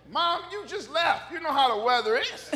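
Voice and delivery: full-throated, high-pitched, very loud yell. Retelling what he says to his mom about the weather: imitating himself yelling. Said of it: "I yell at my mom".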